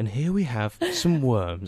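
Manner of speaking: bad, swooping nature-documentary narrator voice. Imitating a nature documentary narrator describing worms: David Attenborough impression. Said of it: "not even a very good Attenborough impression".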